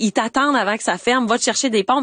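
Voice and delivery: ordinary delivery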